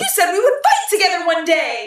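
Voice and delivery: high, loud, big, swooping cartoon-hero voice. Act out how you imagine a character talking, in an attempted Ash Ketchum voice.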